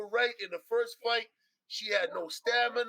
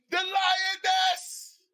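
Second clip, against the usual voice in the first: ear-splitting, high-pitched, loud, excited yell; 9 semitones higher, 5 dB louder than usual. Opening a podcast segment on a fighter, announcing her name: loud yell. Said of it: "I don't mean to yell like that".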